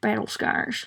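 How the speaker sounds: talked out of the corner of the mouth. Retelling how he says battle scars, imitating someone smirking, side-mouth talk. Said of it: "He's like smirking and talking out of the side of his mouth and says".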